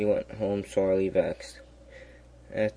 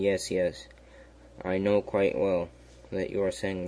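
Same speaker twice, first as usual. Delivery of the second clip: ordinary delivery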